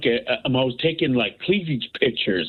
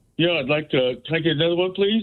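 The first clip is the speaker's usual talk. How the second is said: put-on, deliberately composed, carefully sober, polite voice; 3 semitones higher than usual. Retelling asking a bartender for another drink: imitating trying to sound sober. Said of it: "So I put on my soberest face".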